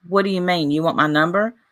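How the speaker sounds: plain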